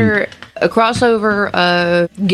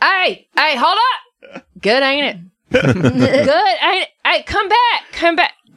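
character voice yelling, much higher pitch; 6 semitones higher than usual. Narrating a scene, the speaker has Big Nicky yelling after someone. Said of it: "Big Nicky's gonna yell".

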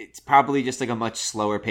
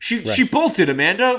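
put-on yell, higher and louder; 10 semitones higher, 6 dB louder than usual. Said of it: "he's just yelling over the phone".

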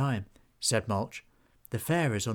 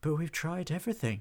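puzzled, perplexed, at-a-loss, pitched-up voice; 5 semitones higher, 4 dB quieter than usual. Narrator reads one character's reply to another, perplexed.

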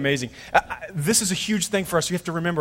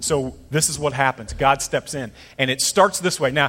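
ordinary delivery

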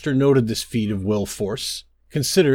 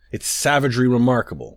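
plain reading voice

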